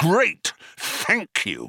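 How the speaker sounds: testy, curt, snappish, high-pitched. Answering a companion who has reluctantly agreed to do it, snapped. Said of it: "snapped Zaphod".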